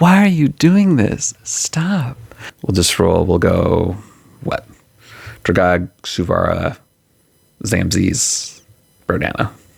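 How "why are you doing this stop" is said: put-on very high, pitched-up little-girl voice. Narrating a game, the speaker voices the voice-mimicking creature: Alzabo's little-girl voice. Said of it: "summons up this like little girl voice and says".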